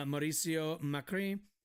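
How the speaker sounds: put-on French-accented pronunciation. Reading a news article aloud and saying a name: French accent. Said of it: "why did I do that with a fucking French accent".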